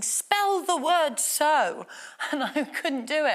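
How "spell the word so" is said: very slow, drawn-out, loud teacher-like shout. Recalling a teacher hitting them over the head with a dictionary, imitating a teacher shouting. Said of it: "just shouting".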